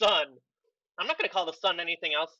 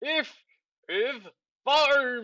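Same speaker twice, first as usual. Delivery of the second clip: sand-choked mumble, "farm" drawn out; 6 semitones higher than usual. Voicing a man with sand spilling out of his mouth, talking with mouth full of sand. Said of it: "like trying to talk with like I have sand in my mouth".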